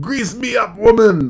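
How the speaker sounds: scream rising upward, pitched high. Retelling a cartoon scene quoted as a kid: imitating Groundskeeper Willie screaming. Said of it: "screaming up".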